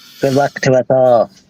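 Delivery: put-on nasal voice. Wishing the contestants luck while imitating Vatic. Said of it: "I'm trying to imitate Vatic".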